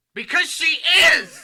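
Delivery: full-on very high, very loud, shrill scream. Answering another speaker's remark about a film character: screaming into the mic. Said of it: "you can't just scream into the mic".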